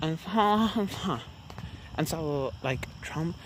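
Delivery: high-pitched, sarcastic millennial voice. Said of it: "Sarcastic millennial voice".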